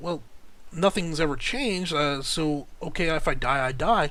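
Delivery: ordinary delivery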